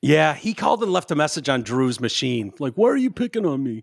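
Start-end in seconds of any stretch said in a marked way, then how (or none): 2.7-3.8 whiny voice pushed up in pitch. Retelling a phone message from Mitch Albom: whiny Mitch Albom imitation. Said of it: "whined like a bitch".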